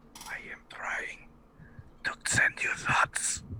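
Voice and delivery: whispered, breathy voice. Speaking in character to a companion while trying to send thoughts: whispering in character. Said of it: "I whisper".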